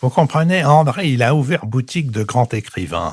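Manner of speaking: thin, little, pinched nasal voice. Quoting a friend's remark about André Malraux: Emmanuel Berl's small nasal voice. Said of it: "il disait avec sa petite voix nasale".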